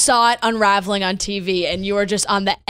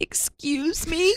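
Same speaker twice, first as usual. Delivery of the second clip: acted tearful crying between sobs; 8 semitones higher, 7 dB quieter than usual. Retelling someone coming over after hearing the bottle pop: imitating Kelsey crying. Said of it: "crying and just going".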